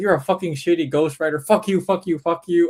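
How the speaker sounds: mock, furious, angry ranting, screaming but held in. Retelling how a guy screamed at a girl after the show: imitating someone screaming. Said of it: "He just starts screaming at this".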